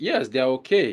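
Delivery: ordinary talk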